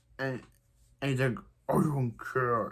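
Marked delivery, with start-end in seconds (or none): 1.7-2.8 angry, disguised vigilante voice. Recapping a TV episode, quoting Diggle doing his Batman impression. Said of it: "His covering his voice is his Batman impression".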